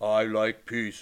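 very low, deep, soft, hushed drawl. A film fan quotes how the character Peace talks: voice of Peace. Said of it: "And he talks like this".

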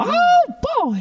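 very high-pitched squeaky cartoon voice. Asked to show off an imitation, speaker does a Mickey Mouse voice. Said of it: "That was a good Mickey Mouse".

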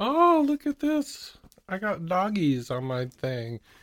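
slow, high, lilting sing-song drawn-out put-on voice. Retelling what Julie said on opening her card: imitating Julie. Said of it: "You said".

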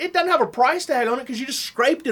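put-on shouting. Retelling how he answered the customer: retelling his own loud reply. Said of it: "I just right back as loud".

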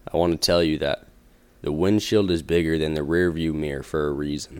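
put-on deepened voice, low. Sending listeners off with a quote, read in a put-on deep voice. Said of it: "I'm going to do a deep voice quote".

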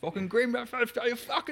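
mock shouting. Imitating a driver shouting after a race: imitating a driver shouting. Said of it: "That's a great impression".

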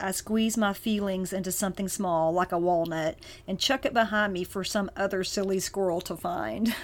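usual speaking voice

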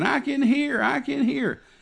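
play-acted, very high, drawn-out screaming cry. Recounting a man jumping up and down holding his ear, imitating a man screaming. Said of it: "he was just screaming".

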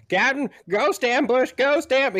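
very high, shrill, loud alarmed yell. A character comes down the steps calling to the captain: yelling. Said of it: "he's yelling".

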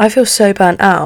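ordinary talk

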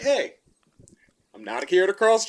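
unthreatening, harmless tone. Showing how you speak to people so you seem non-threatening, in a non-threatening voice. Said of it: "you got to put in your non-threatening voice".

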